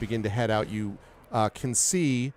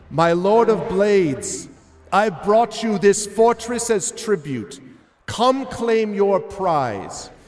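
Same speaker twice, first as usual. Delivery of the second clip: very high, shrill, screamed-out voice; 10 semitones higher, 8 dB louder than usual. Narrating a tabletop scene and voicing her line as she screams it. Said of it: "as she screams this out".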